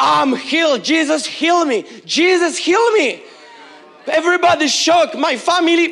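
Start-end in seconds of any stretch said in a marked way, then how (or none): 0.0-3.2 slow, deliberate, drawn-out proclaiming tone. Retelling coming back to church five minutes later: imitating own past shout. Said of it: "I came back to church five minutes later and I shout".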